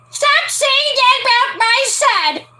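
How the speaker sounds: put-on old lady voice, very high pitched. Playing the old woman who was just called an old hag, old woman voice. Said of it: "I can't do an old woman's voice".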